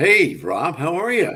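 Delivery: loud radio announcer voice. Greeting the host the way they used to in radio, radio voice. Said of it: "our radio voices".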